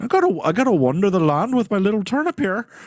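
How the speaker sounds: poor put-on Irish accent. Retelling the Stingy Jack legend, speaking as Stingy Jack in a bad Irish accent. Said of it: "I can't do an Irish accent".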